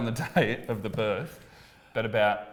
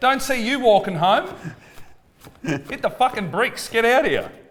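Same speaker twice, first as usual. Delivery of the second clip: yelling, pitched higher and louder; 11 semitones higher, 5 dB louder than usual. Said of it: "I'm yelling at him over parking".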